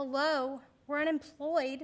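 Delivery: put-on small child voice, like a four-year-old. Sitting in a car seat, looking straight back at him, in a little four-year-old voice. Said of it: "in my little four-year-old voice".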